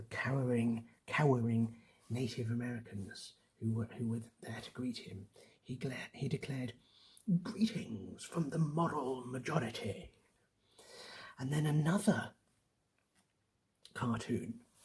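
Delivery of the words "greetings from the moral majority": put-on British accent laid on thick, hammy, over-the-top. Describing a cartoon of a Plymouth landing: hammy exaggerated British accent. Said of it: "I'm going to use my most hammy British accent here".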